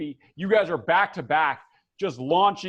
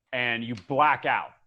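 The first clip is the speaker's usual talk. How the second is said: normal talking voice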